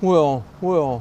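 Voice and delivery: very loud, high, put-on scoffing well. Imitating people taking the speaker to task: imitating critics' mocking 'well'. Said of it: "that's the tone of voice. That's my mockery tone".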